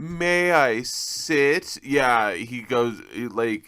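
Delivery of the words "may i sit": hammy, polite voice with pitch lifted up. Retelling a movie scene where an actor grovels to the king: imitating Matthew Lillard hamming it up. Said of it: "hamming it up".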